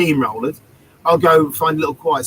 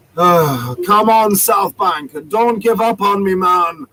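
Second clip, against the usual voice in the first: acted-out slow, weary, distraught tone; 4 semitones higher, 4 dB louder than usual. Retelling what a reggae musician said after stopping his tune: imitating Derek's tired, distraught tone. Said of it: "you can hear the tired, distraught tones".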